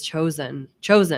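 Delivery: strong stress on the word chosen. Making a point to another speaker: stress on chosen. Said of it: "I'm emphasizing the word chosen".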